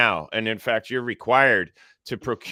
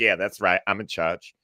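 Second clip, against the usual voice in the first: smug, smirking put-on woman's voice, pitched lower; 3 semitones lower than usual. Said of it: "she smirked".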